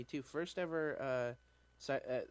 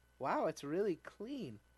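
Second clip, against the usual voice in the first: high, mock patronizing, condescending motherly tone; 5 semitones higher than usual. Retelling the first thing a visitor said on arriving: mock-condescending, like a mom. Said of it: "in a little bit of a condescending way, like a mom".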